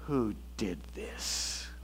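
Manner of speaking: play-acted whisper dripping with disgust. Retelling how Mom lined the kids up at the wall, mimicking disgust. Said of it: "her voice dripping with disgust".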